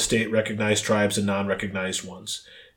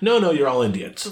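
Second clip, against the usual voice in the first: mock talking-down, patronizing, condescending tone; 4 semitones higher than usual. Acting out a colonizer dismissing a Mohawk man: mock patronizing colonizer voice. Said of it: "how incredibly patronizing".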